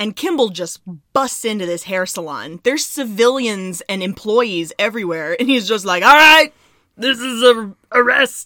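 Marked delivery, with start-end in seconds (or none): 6.0-8.5 loud, booming, bad Austrian accent. Retelling Kimble busting into a hair salon, bad Schwarzenegger impression. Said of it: "Your Schwarzenegger impression".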